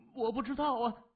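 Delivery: very high-pitched, quavering, trembling voice. A young nurse, surrounded by staring soldiers, answers them: trembling voice. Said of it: "声音颤抖地说".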